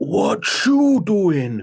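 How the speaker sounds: put-on Puerto Rican accent. Mocking a man's attempt at an accent, the speaker imitates his fake Puerto Rican accent. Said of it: "doing like an accent to make himself sound like he's".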